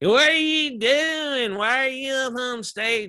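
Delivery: put-on heavy Southern drawl, drunk and obnoxious, high and slow. A speaker retells what a drunk woman said to him, imitating a drunk, obnoxious woman. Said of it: "she was so drunk and obnoxious".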